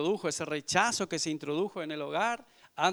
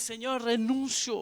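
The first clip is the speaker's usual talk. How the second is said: put-on crying, loud and high, at full voice; 7 semitones higher than usual. Retelling crying out to the Lord on the floor: retelling loud crying. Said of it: "llorando a gran voz".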